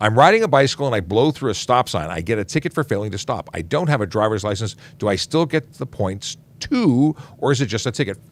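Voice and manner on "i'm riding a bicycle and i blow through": plain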